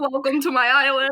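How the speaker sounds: put-on loud, high elderly voice. Imagining a hundred-year-old Brando greeting guests: hundred-year-old Marlon Brando voice. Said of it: "then a hundred-year-old Brando comes out".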